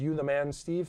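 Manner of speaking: plain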